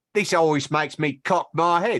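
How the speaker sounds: put-on British accent. Reading a written line aloud for Eric, in a British accent. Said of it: "but in a British accent".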